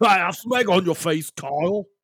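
put-on British accent. Joking around in a put-on British accent. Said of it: "can't get out of the accent".

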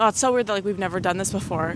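normal talking voice

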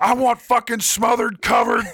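mock very high, swooping, loud bellowed shout. Among friends, a speaker acts out shouting her own order at a Waffle House, retelling a shouted order. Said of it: "just shouts her own order".

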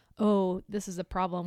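ordinary delivery

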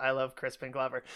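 ordinary talk

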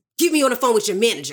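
acted livid, mock-furious voice. Speaker acts out going in about a missing package: acting out a livid complaint. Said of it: "I am livid".

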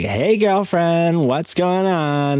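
over-the-top flamboyant voice. Speaker retells how a man greeted colorful people on camera, in an overly flamboyant voice. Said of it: "give him like the overly like flamboyant voice".

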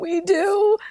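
put-on very high, tearful, crying young child voice. Retelling her daughter's tearful reply: imitating a crying daughter. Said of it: "she just started crying, and she goes".

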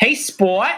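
put-on Boston accent. Imitating an actor's film line to a son: Kennedy-style Boston accent. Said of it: "Kennedy-style Boston accent".

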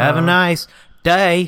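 every word stretched out, loud. Quoting a movie line the way the character says it: imitating Forrest Gump. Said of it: "That's how he says it".

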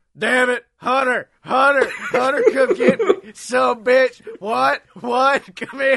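loud, high wrestler hollering. Retelling a commentary bit about a botch: Luke Gallows doing Austin impression. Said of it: "the Luke Gallows Austin impression".

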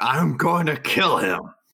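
high, wild scream, held back and contained. Voicing a character running on all fours after Bright Claws: screaming. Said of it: "I'm just screaming and just like".

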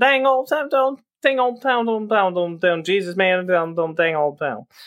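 mock cartoonish drawl. Retelling a woman kicking his car at 3 a.m., Boomhauer impression. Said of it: "sound like Boomhauer from King of the Hill".

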